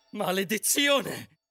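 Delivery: screaming. The queen reacts to the magic mirror's words, screamed. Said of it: "urlò la regina".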